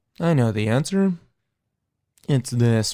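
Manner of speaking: mechanical, even, level-toned robot voice. Imitating a guy answering in math class, in a robot voice. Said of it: "talking like a robot".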